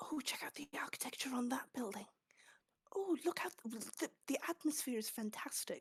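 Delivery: very hushed, quiet stage whisper, chattering. Playing a character posing as a tourist to the party: actor's whisper as a tourist. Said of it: "in a kind of actor's whisper".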